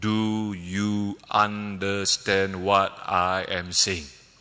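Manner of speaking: very slow, deliberate, over-careful, condescending talking. Retelling how a man spoke to him, in a very slow tone. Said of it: "he was talking to me in a very slow tone".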